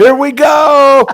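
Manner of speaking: very high, loud, excited screaming holler. Recalling a boat trip whenever the boat slowed down, retelling own yelling. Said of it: "I'd start yelling and screaming".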